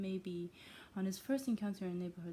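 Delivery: ordinary delivery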